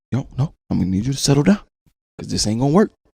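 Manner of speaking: calm and quiet. Showing how to tell her to calm down first, speaker talks real calm. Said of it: "so you talk to her real calm too".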